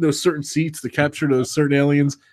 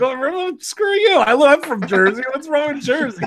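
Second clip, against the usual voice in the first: put-on offended tone, much higher; 11 semitones higher than usual. Retelling his reaction when someone mocked jersey, mock-offended retort. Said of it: "I took offense to that".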